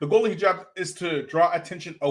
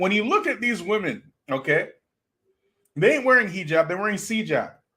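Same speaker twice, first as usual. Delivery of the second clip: usual speaking voice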